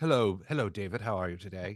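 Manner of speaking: put-on Mid-Atlantic accent. Retelling the high school chorus teacher greeting a student, imitating Mister Westner's Mid-Atlantic accent. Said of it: "one of those with the Mid Atlantic thing".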